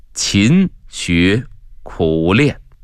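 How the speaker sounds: very slow, each word spaced out. An old monk answers an eager scholar, slow, word by word. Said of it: "智勇一字一顿的".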